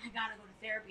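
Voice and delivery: embarrassed, sheepish delivery.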